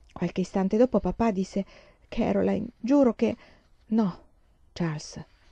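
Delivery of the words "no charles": soft, murmured protesting tone under breath. In bed at night, mother stops her husband mid-sentence, murmured. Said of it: "mormorò mamma".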